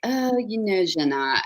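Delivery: put-on English with French accent. The speaker quotes her french agent: french accent impression. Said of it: "she hates it when I do this accent".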